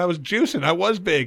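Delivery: ordinary talk, nothing marked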